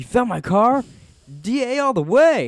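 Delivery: put-on very high, very loud, swooping excited voice. Retelling a scene where Jesse hears his car was found: excited Jesse impression. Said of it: "It's all excited".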